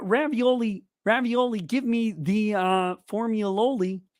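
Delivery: slow, drawling frog puppet voice. Answering a chat request with a line: Kermit voice doing a Trump impression. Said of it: "Kermit voice doing a Trump impression".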